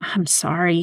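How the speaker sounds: hushed whispering. A man answering the voice inside him, whispered. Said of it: "he whispered".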